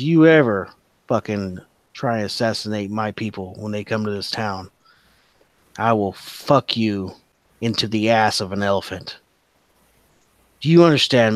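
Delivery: intimidating, menacing voice. Voicing a character threatening a man he lifted onto the table: intimidating threat. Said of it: "he's gonna roll intimidation".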